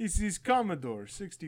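very loud, swooping, bad put-on Russian accent. Joking after someone says the name sounds Soviet Russian: bad fake Russian accent. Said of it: "I'm bad at accents".

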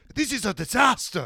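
put-on dramatic, passionate delivery. Retelling a race radio moment from driver Charles: mock-passionate Charles impression. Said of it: "he just says it so passionately".

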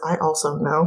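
muttered, mumbled under breath. Narrating a tabletop game, voicing a character after another runs away, muttering. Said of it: "Eden kind of mutters".

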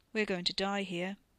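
cold, flat, lifeless, dull, matter-of-fact voice. Reading a story, Ricky speaking in front of Wes, cold, dull, matter-of-fact. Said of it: "Ricky's tone was so cold, so dull, so matter-of-fact".

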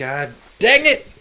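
very loud, high shout right into the mic. Speaking into the mic while recording: yelling. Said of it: "Sorry for yelling into the mic".

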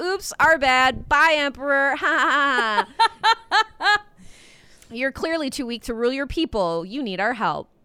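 put-on snide, slow, catty mean-girl drawl, stretched "ha". Retelling how colonizers dismissed an emperor, in a put-on mean girl voice. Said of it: "I like your mean girl voice".

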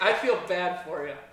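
loud yelling.

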